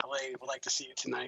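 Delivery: very quiet, hushed half-whisper. Voicing a hidden figure passing a secret message: half-whispering a message. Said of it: "you're gonna hear a whisper".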